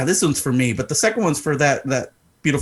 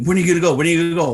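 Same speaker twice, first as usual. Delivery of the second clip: put-on frantic tantrum, faster; 4 semitones higher than usual. Retelling how she kept asking when he would go, imitating her throwing a fit. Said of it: "She's throwing a little bitch fit, going crazy".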